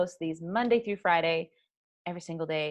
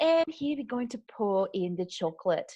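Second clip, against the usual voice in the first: sweet put-on Australian accent; 2 semitones higher than usual. Describing a favorite baking YouTuber to another person, Anne Reardon Australian accent. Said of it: "She has like this adorable Australian accent".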